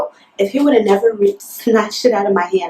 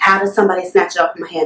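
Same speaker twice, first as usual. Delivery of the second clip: ordinary talk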